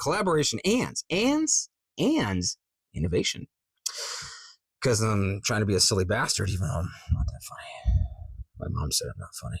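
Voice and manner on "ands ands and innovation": each and stressed and pushed up high. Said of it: "the way it says, like".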